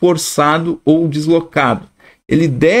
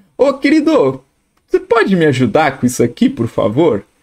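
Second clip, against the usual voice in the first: pointedly ironic, swooping sing-song. Showing how calling someone "querido" is meant ironically: ironic. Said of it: "Eu tô sendo irônico".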